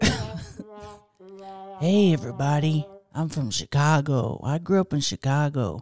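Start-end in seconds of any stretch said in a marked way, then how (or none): 1.8-5.8 laid-back cool voice. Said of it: "This is your cool guy voice".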